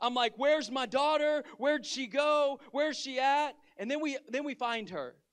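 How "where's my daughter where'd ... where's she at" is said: acted, freaking-out, panicked, frantic voice. Retelling searching for a missing daughter, retelling own panic. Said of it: "I was completely, like, panicked. I'm freaking out".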